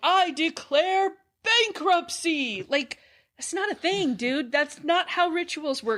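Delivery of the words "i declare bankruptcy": pitched-up yell, delivered like a grand proclamation. Comparing a movie scene to a TV moment: imitating Michael Scott yelling. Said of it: "Michael Scott from The Office standing up and yelling".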